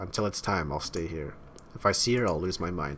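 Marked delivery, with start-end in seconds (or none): none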